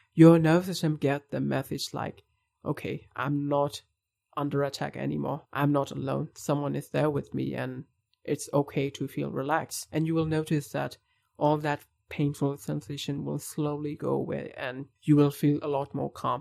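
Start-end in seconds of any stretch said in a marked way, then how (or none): none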